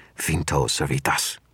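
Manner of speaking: hissed, stagey, theatrical, full drama. As a man opens the door to leave, the narrator gestures to the staff: dramatic hiss. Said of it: "hissed in my best dramatic voice".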